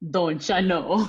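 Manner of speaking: bad attempt at Jamaican accent. Trying the line after admitting being horrible at accents: bad Jamaican accent. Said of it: "that's not Jamaican".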